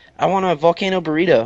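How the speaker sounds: ordinary delivery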